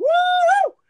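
very high, booming, loud, hyped-up excited whoop. Retelling a game character's whoop: imitating an excited loud shout. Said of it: "I just love how excited he got".

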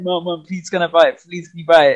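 mock happy, pleading tone. Acting out asking their mom to buy it, acting out happy begging. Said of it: "I was so happy".

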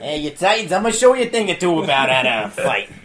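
loud taunting Boston accent. Imagining Deathstroke from Boston taunting the Titans, Deathstroke with a Boston accent. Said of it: "I wish Deathstroke talked like he was from Boston".

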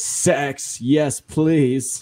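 bad, put-on British accent. Quoting Austin Powers, the speaker tries his accent: Austin Powers accent. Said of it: "I tried to do that accent".

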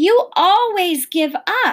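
shouted outburst. The narrator answers the preacher, who said to give up; shouting. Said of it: "I shouted".

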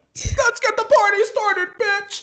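very high, put-on, fake-happy party cheer. Retelling greeting people at work after crying: imitating own fake-happy greeting. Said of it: "Fake happy".

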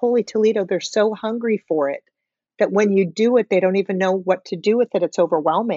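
plain

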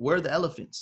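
put-on South African accent in English. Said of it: "in that like South African accent".

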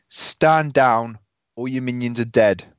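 called-out delivery. Turning around in character mid-fight to order an enemy down: screaming. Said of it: "I'm gonna turn around and I'm gonna scream".

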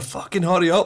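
put-on teasing voice, yelled, high-pitched, through laughter. Retelling teasing the other group after catching up: retelling a laughing shout. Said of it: "laughing at each other".

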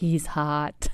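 whispered voice. Retelling what was just whispered about an actor: imitating own whisper. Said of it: "I was like".

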